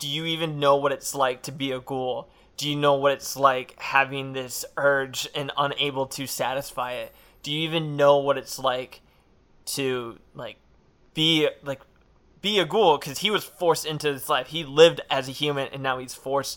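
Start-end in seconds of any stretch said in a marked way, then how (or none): none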